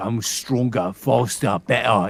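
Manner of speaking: deliberate put-on Cockney accent, loud and slow. A voice actor recalling playing with his son, in a cockney accent. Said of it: "then I started doing doing Cockney".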